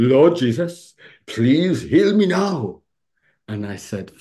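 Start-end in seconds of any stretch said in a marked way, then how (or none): 0.0-2.8 put-on lovely Welsh accent, higher and louder. Speaker quotes a lady repeating his healing prayer, lovely Welsh accent. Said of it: "a lovely Welsh accent".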